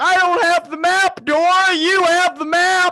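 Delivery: very high, shrill, very loud freaked-out screaming. Recounting a Nickelodeon show scene where Crazy Steve freaks out, imitating Crazy Steve screaming. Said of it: "he's like screaming in that exact tone".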